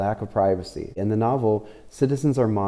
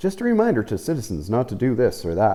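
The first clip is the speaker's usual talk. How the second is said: mock-condescending announcer voice with sing-song swoops; 2 semitones higher than usual. Describing surveillance loudspeakers addressing citizens, in a mock-condescending announcer voice. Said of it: "they say it in like a, a condescending voice".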